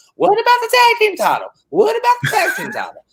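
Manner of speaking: very high, swooping, over-animated sing-song voice. Mimicking how he keeps asking the same question, imitating another man's voice. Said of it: "I don't sound like that".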